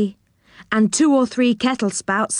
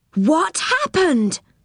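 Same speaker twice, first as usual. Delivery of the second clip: calling out, crying out, pitched up; 6 semitones higher than usual. Rick, seeing how big Joe and his friends have become: crying out. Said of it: "Cried Rick".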